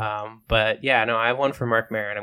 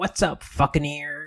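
pitched-up, casual, tossed-off delivery; 5 semitones higher than usual. Acting out the chatty skull in the dream: Marc Maron impression. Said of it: "the skull is played by Marc Maron".

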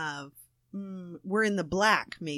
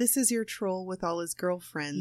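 usual speaking voice

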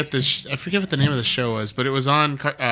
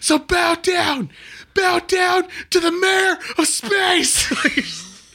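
mock, very high, power-mad megalomaniac scream. Retelling a boy's class president speech, retelling a scream. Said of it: "he just screams out".

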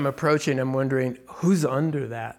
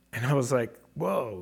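ordinary talk

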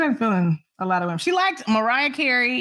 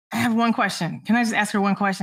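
plain

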